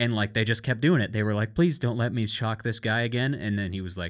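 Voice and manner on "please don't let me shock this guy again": put-on desperate, begging, pleading voice. Retelling a businessman breaking down before the researcher: imitating someone begging. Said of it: "begging for the researcher to let him stop".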